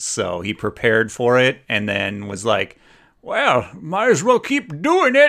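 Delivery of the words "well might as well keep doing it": very high, shrill, fake, bad Scottish old-man accent. Retelling what a man thought after he got rid of his notebook, bad scottish accent. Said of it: "The bad Scottish".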